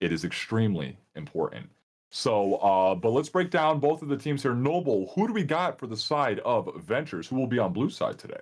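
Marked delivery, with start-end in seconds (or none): 0.0-1.7 very low, grave, dead-serious delivery. Stressing how important the match is: serious tone. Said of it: "Do you hear the seriousness in my voice".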